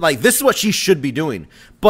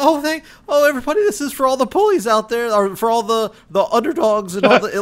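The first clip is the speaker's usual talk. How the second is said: mock blubbering through tears, pitched up; 7 semitones higher than usual. Imitating her speech after winning the belt: imitating someone crying. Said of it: "it's literally her crying".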